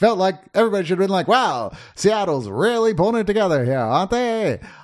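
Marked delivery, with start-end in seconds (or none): 1.3-4.6 put-on speaking with Mid-Atlantic accent. Wondering why people talked that way on the radio, in a Mid-Atlantic accent. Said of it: "I kind of miss the Mid-Atlantic accent".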